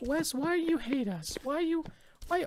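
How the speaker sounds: very high, tiny, small little voice. Imagining listeners complaining to the host about the episodes, in a mock soft little voice. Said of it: "like softer voices now".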